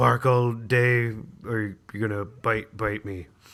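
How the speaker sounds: slow, gruff, drawn-out tough-guy voice. Discussing a film's casting, delivering a line as a Michael Madsen impression. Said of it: "That was that was my that was my Michael Madsen".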